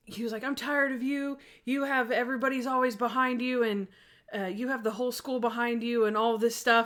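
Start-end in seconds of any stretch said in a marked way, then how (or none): 0.4-6.0 heated, angry ranting outburst. Retelling how a student started going off on the speaker: imitating someone ranting angrily. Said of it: "started going off on me".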